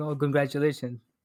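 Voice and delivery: plain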